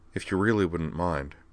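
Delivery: ordinary delivery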